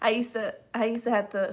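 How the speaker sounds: voice catching, choking up, close to tears. Recalling the end of a pregnancy during college, about to cry. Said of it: "I'm about to cry".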